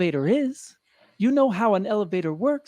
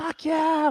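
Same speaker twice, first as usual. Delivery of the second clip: mock angry outburst in a raised pitch; 6 semitones higher than usual. Retelling an elevator fight with a stranger: retelling an angry outburst. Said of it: "I was so mad".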